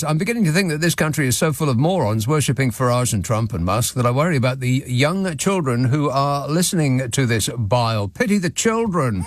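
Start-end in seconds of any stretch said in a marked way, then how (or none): none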